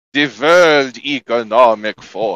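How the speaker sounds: thick German accent. Trying out accents, the speaker does a thick German accent. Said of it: "a thick german accent you want to go for".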